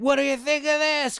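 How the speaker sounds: put-on, very high hollered yell. Retelling dad at a fireworks competition with the marina: imitating dad yelling.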